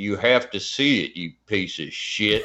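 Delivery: growled horror-movie killer voice, slasher-villain style. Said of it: "in [name] Halloween voice".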